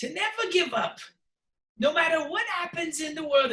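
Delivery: worst possible Irish accent, very high-pitched. Giving a leprechaun's advice in his voice, bad irish accent. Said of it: "this is the worst accent possible".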